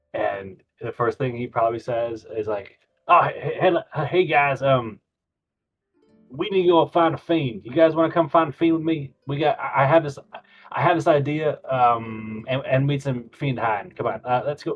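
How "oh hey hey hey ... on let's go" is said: eager, wide-eyed, excited rambling elf voice. Voicing an elf who urges the party to go find a fiend: excited, wide-eyed elf. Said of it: "wide-eyed and excited".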